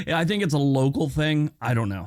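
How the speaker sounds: ordinary talk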